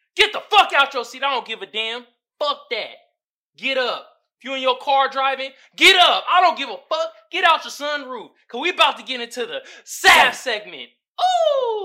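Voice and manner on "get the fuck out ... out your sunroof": yelling, shouting higher and louder. Hyping up listeners to get out of their seats: yelling. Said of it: "now I'm yelling like a motherfucker".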